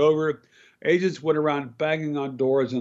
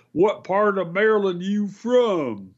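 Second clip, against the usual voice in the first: play-acted, pitched-up, with from lingering and drawn out; 6 semitones higher than usual. Retelling a man who came out of a hardware store to ask a question, booming voice. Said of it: "asks in a booming voice".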